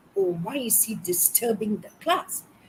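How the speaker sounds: ordinary talk, nothing marked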